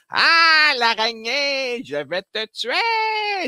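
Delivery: very high, very drawn-out, slow diabolical villain voice. Describing typical villains of the seventies, the speaker voices one: diabolical seventies villain voice. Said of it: "le diabolique des années soixante-dix".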